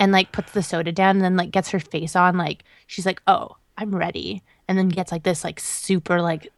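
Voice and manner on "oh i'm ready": put-on sassy little girl voice. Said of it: "real sassy".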